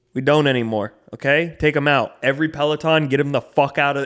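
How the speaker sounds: stone-cold serious rant. Retelling a boss ordering the Pelotons out: imitating someone dead serious. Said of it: "he was so serious, too".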